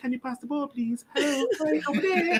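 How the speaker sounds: put-on whisper. Imitating a captain who never spoke, asking for the ball: imitating someone whispering. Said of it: "He's just whispering to you".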